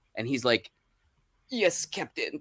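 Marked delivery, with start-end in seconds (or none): 1.5-2.4 put-on soft, very elderly man voice. On the bridge of the Enterprise, answer Captain Kirk in a super old Chekov voice. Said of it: "being super old".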